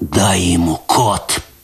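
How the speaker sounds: low, rasped, hoarse, urging tone. A narrator reads a bleeding man on the floor urging Kot on, hoarse rasp. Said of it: "прохрипел он".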